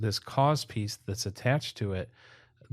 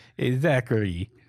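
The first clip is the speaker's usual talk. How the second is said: bad fake Russian accent, louder; 2 semitones higher, 6 dB louder than usual. Imagining a call from some Russian dude to Zachary, terrible Russian accent. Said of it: "that's a terrible accent".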